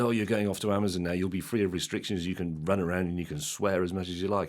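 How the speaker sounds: normal talking voice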